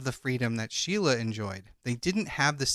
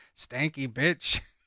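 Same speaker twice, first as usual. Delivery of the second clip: mock mutter, quiet, under the breath. Retelling hearing a man spraying air freshener in the room, imitating muttering under breath. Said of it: "he mutters under his breath".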